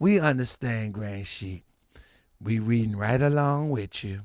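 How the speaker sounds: acted, very low, quiet, extra-polite, sweet nice voice. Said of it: "Takaya trying to be nice".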